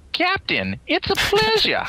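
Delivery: very high, swooping, drawn-out alien voice. Introduced as the Science Committee chairman, answering in an Andorian voice. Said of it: "I gotta do my Andorran voice".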